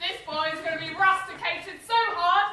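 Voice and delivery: furious, high-pitched, loud voice.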